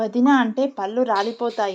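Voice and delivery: plain reading voice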